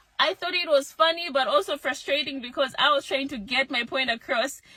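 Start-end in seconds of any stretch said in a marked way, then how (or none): none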